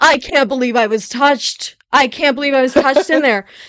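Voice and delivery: high, loud, oversensitive complaining voice. Retelling how goalies react to contact: imitating a special-snowflake goalie. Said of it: "they're like".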